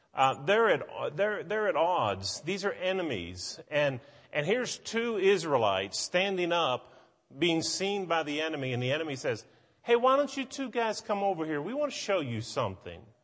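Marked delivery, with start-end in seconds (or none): 9.8-13.0 play-acted sarcastic, taunting sing-song, pitched up. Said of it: "can you not hear the sarcasm in that".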